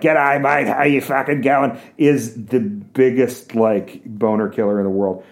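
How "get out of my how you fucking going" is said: nasal Australian accent, pitched up. Contrasting kinds of australian accent, nasal australian accent. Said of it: "but that nasal".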